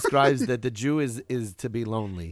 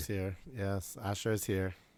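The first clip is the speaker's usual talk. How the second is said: unenthusiastic, not excited, quieter; 3 semitones lower, 12 dB quieter than usual. Joining the conversation as the others announce the arrival: not sounding excited. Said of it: "Asher does not sound very excited".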